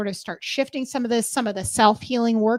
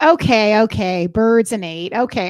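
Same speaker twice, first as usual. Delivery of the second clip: mock salty, sarcastic put-upon tone, slow and loud; 6 dB louder than usual. Retelling answering the guides about birds and eight: imitating own salty, sarcastic tone. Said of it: "I'm a little salty with them".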